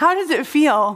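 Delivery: speech laced with giggles. Retelling what he said to her the morning she had to preach: imitating someone giggling. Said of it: "he was just giggling".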